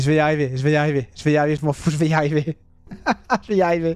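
fast, repeated words through nervous laughter. Player keeps failing a game passage, insisting he'll make it; laughing nervously. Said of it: "Je rigole nerveusement".

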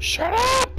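very high-pitched, loud shout.

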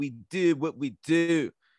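put-on very slow, drawn-out Baltimore accent. Describing a fighter who sounded British: imitating a fighter's Baltimore accent. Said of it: "this fighter who's like".

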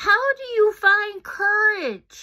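very loud, slow calling. Reading a story aloud, the narrator gives Pika's question to Mrs. Waddell, raising voice against the breeze. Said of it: "It's a timid [name] on a tall mountain who helps a friend discover the courage to say no to a bully. / Old Daniel opened one of his large peepers to see two blue peepers peeping back at him. ... Old D".

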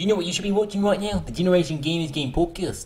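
put-on New Zealand accent. Speaking to the others in the group: New Zealand accent. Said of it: "I'm doing it in a New Zealand accent".

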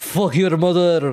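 copied delivery with strongly rolled R's. Repeating a line from a clip, imitating it: rolling the R's. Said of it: "if I could roll the R's at the end there".

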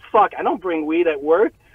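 plain

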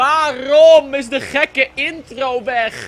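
loud, slow, high screaming.

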